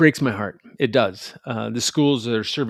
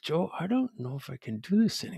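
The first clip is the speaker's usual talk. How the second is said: soft, shaken, hushed half-whisper; 4 semitones higher, 8 dB quieter than usual. Retelling what a man came up and half-whispered to him, retelling a half-whisper. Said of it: "And he whispers".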